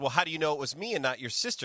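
put-on joking, teasing tone. Retelling the speaker's mom's reply to a childhood remark, retelling a joking reply. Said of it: "she jokingly said".

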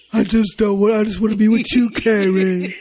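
mocking wimpy voice. Mocking a TV character who turned into a wimp: mocking wimpy character voice. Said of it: "Don't do that damn voice".

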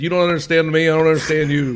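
re-enacted holler. Retelling how he hollered at workers who spoke no English, retelling a holler. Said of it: "I'm sitting there hollering at them".

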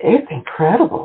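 effusive, overflowing, gushing, high voice. [name], helped down the steps beside a waterfall by Alejandro, gushing. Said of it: "[name] gushed".

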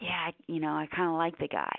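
put-on whisper. Retelling what Uber and taxi drivers would say: imitating someone whispering. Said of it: "And they would whisper it".

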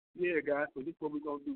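dull, lifeless put-on delivery, bored drone. Mimicking how a boring speaker sounds to an audience, imitating a boring speaker. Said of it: "This dude's boring. And I'm sitting up here talking like I'm".

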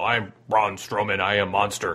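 choppy, low caveman voice. Asking Jason about a wrestler's changed voice, doing a Braun Strowman caveman voice. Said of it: "less of the caveman voice".

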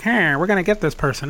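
prim, buttoned-up, uptight comic-book put-on tone. Describing how he pictured a comic-book character's voice, put-on uptight voice. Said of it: "with this really uptight voice".

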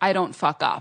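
low, flat, bone-dry, unbothered deadpan. Retelling a TV moment where Ina is asked about a ruined recipe: Ina's deadpan reply retold.

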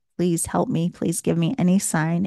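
tearful, crying, desperate, begging plea. Recalling crying on her bedroom floor, the speaker reenacts her tearful plea. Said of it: "begging, pleading, praying".

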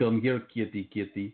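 fake, menacing, intimidating put-on Russian accent. Showing how a Russian accent makes a simple sentence sound intimidating, intimidating Russian accent. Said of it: "make it sound intimidating with a Russian accent".

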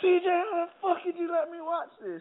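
mock shrill, very high screaming outburst. Retelling how someone screamed at the speaker: imitating someone screaming. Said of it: "he just screamed at me".

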